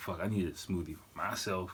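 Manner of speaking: normal talking voice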